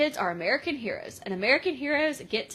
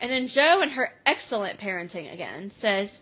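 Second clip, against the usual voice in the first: normal talking voice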